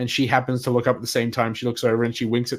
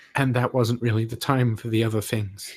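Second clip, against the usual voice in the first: speaking quietly in a quiet voice. Voicing a character who leans over and explains the guild's distractions: speaking quietly. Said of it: "leans over, like, quietly".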